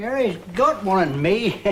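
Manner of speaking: ordinary delivery, nothing marked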